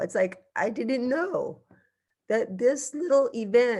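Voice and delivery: getting choked up mid-thought, emotional. A parent talks about an event that let their kid compete, choking up. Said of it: "I'm choking up right now".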